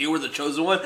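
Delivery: ordinary talk, nothing marked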